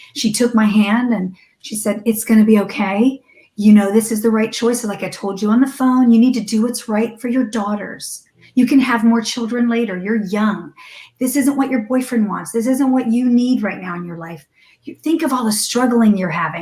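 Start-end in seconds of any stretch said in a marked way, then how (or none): 2.1-16.7 mimicked sweet voice. Retelling what a woman said while holding her hand, imitating her sweet voice. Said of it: "talking with this sweet voice to me".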